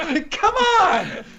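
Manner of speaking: high, slow, laughing exasperated cry.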